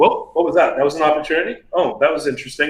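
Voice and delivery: ordinary delivery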